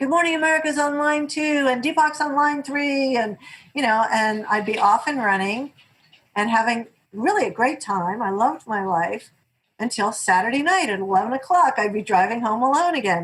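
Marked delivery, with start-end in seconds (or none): 0.0-3.2 put-on light, mild, high-pitched yell. Retelling people at the office screaming at the speaker, imitating someone screaming. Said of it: "they're screaming at me".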